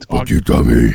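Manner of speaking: put-on monster voice. Doing a Cookie Monster voice at Tommy: Cookie Monster voice. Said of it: "it's an easy voice to do".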